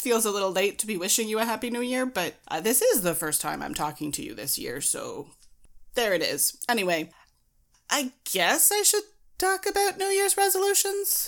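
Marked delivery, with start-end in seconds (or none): 7.9-11.3 unsure voice climbing very high in pitch. Introducing the next subject, voice rising higher, unsure. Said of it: "she says as her voice gets higher".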